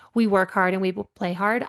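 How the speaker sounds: ordinary talk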